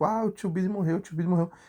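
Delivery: play-acted weeping, lightly shouted tearful cry. Retelling how a younger sister ran up with bad news: imitating someone crying and shouting. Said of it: "chorando, e aí, tipo, gritando".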